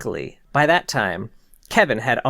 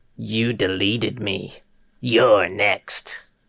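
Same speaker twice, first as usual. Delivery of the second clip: slow, flat, garbled, backwards-sounding robotic machine voice; 3 semitones lower than usual. Reading a creepy story aloud, a haunted program speaks: backwards robotic voice. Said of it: "laughed in that backwards robotic voice".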